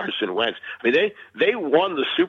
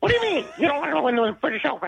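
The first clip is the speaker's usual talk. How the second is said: put-on angry voice, higher pitch. Retelling a golfer's angry interview reaction: Jack Nicklaus impression. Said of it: "I love your Jack Nicklaus".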